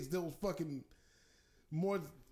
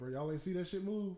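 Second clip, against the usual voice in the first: plain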